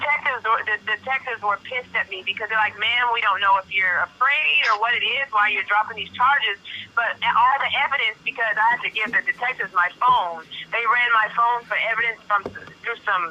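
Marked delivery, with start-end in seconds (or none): none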